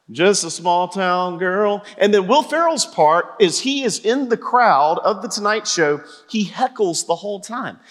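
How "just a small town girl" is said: flat, level, tuneless monotone. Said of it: "instead it's very monotone".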